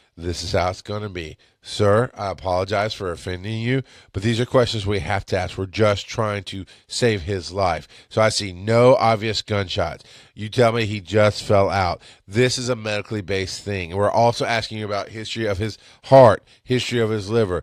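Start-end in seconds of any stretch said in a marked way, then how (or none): none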